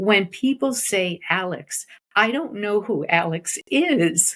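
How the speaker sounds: slow, acted choked-up voice, breaking, near tears. Retelling what a man once told her, choking up. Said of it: "I don't know why this is going to make me cry".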